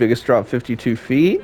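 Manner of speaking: voice cracking mid-word on "feet". Going over a coaster's stats, voice cracking on 'feet'. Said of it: "my voice just cracked there".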